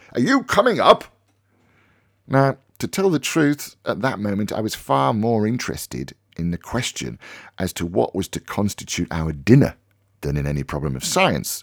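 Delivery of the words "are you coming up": frantic, high-pitched, loud cry. Reading a story, a man stamping on the landing calls to Harry, frantic crying out. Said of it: "He cried in a frantic voice".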